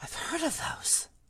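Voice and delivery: hushed murmur, said under the breath. Reading a story aloud, voicing a character gasping at an unwrapped gift, in a hushed voice. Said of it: "he said in a hushed voice".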